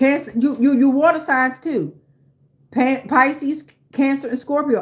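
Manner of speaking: stuttering, repeated stumbling over words. Listing the water signs during an astrology reading, stuttering. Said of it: "I'm stuttering".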